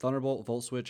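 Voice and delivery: ordinary talk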